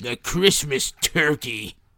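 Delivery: sour, grumpy put-on old man voice. Reading a film critic's quote aloud, in an imagined voice for the critic. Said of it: "read this as the way I think he sounds".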